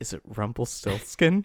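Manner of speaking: dramatic, movie-climax style delivery. Retelling a character's line at a camera zoom-in: imitating a dramatic line. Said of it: "that dramatic moment where the camera zooms in, and he goes".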